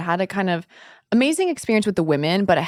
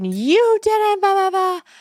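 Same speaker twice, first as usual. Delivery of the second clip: put-on very high sobbing, bawling crying yell; 13 semitones higher, 3 dB louder than usual. Retelling breaking down in a serious meeting, imitating own tearful yelling. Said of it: "and I'm yelling and I'm bawling".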